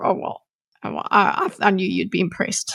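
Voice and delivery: put-on snarky voice. Quoting the sword after it gets no response: imitating a snarky sword. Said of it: "it's kind of snarky thing".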